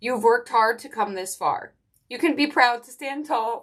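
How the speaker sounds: tearful delivery through tears, voice breaking. Reading an encouraging message aloud, the speaker begins crying. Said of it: "I don't know why I'm crying".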